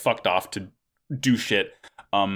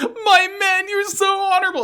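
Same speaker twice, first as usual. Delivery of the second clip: put-on tearful blubbering, very high, sobbing cry; 4 dB louder than usual. Recapping a show, speaker acts out Eok crying to his men, imitating Eok crying. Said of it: "like cries".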